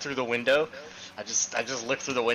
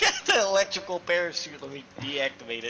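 mocking, teasing voice with swooping pitch; 4 semitones higher than usual. Mocking the other player's word deactivate: mocking imitation of a friend. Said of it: "said deactivate like it's electrical".

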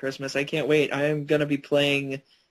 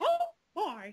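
squeaky voice, soft and high; 8 dB quieter than usual. Taking a turn at impressions with the group, doing a Mickey Mouse voice. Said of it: "What a cracking Mickey Mouse that is".

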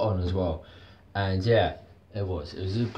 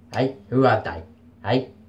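loud put-on Cockney accent; 3 semitones higher, 5 dB louder than usual. Speaker shows off their Cockney accent, then says they nailed it: put-on Cockney accent. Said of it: "That's my Cockney accent".

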